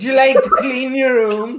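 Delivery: very high-pitched, loud Northern Irish accent. Asked to redo the line specifically in Northern Irish: Northern Irish accent. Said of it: "Northern Irish".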